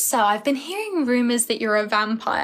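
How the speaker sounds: ordinary talk, nothing marked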